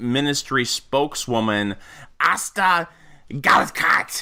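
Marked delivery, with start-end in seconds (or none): 2.2-4.2 put-on German accent, pitched up. Pronouncing a defense ministry spokeswoman's name in a Hitler accent. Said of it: "I'm pronouncing that name uh, with my Hitler accent".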